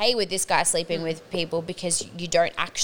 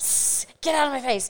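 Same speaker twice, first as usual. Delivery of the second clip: mock hissing, higher; 7 semitones higher than usual. Retelling telling off a flirting man: imitating hissing at him. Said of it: "Starts hissing at men".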